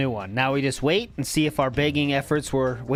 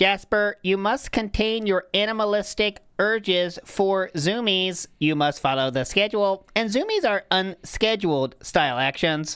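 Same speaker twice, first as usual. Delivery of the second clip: put-on alien voice; 5 semitones higher than usual. Answering a viewer's request, address Jasper in an alien voice. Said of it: "D S P alien voice Jasper".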